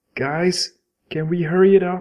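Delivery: shouting.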